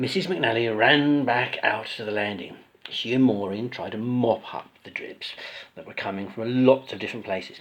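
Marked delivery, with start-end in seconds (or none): none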